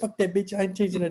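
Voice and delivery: high-pitched fast talking. Telling a story and quoting a man, high-pitched and fast-talking. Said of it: "he had a high high pitched voice and he talked really fast".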